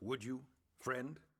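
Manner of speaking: usual speaking voice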